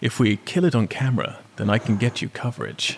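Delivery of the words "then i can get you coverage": put-on smugness, quieter. Recounting what a british guy said on camera, retelling a smug remark. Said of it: "the British guy smugly says".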